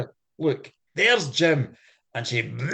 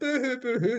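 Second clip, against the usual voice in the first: high, very emotional, overwrought princess voice; 5 semitones higher, 4 dB quieter than usual. Retelling a story, the speaker voices the princess reacting to the mermaid: mock-emotional. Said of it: "She's getting very emotional".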